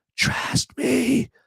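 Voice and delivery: slow, drawn-out, creepy whisper. Joking while asking viewers to like the video: creepy Joe Biden whisper. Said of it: "Do my creepy Joe Biden whisper".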